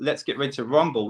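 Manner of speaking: plain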